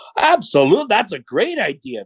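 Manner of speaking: slow, heavy sarcasm. Retelling how someone answers a bad idea: imitating Scott's sarcastic reply. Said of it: "very sarcastic".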